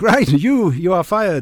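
put-on Romanian accent. Retelling how the restaurant manager fired him after a meeting, in a romanian accent. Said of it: "he said in a Romanian accent".

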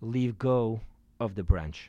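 very low, deep, heavenly god-like voice. Telling a joke, voicing the reply to a man hanging from a cliff: heavenly voice. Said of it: "he hears the heavenly voice say".

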